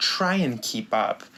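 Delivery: put-on menacing, sinister, catty, bitchy tone. Retelling how a game character taunts the player: imitating a sinister, bitchy tone. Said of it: "she says it with such a, like, sinister, bitchy tone".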